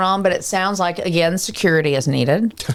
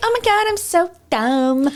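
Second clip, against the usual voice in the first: very high, put-on baby voice; 11 semitones higher than usual. Mocking a stereotyped blonde character, in a high-pitched baby voice. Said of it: "That like high pitched baby voice".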